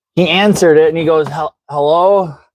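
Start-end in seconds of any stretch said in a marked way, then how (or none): 1.3-2.3 put-on, imitated old man voice. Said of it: "he sounds like an old man to begin with".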